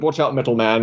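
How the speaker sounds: ordinary delivery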